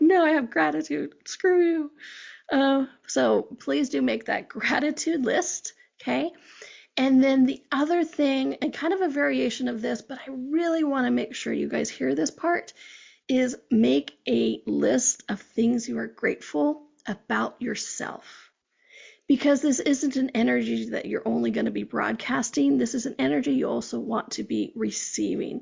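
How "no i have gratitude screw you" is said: high, loud, defiant voice. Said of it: "You're like".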